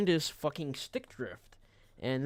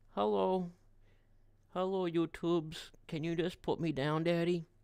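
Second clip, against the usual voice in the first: put-on voice of a pet cat; 3 semitones higher, 3 dB quieter than usual. Holding the cat and speaking for it: voicing the cat Thor. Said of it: "Thor says".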